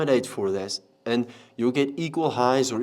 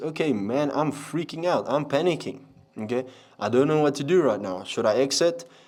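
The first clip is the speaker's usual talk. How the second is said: ordinary delivery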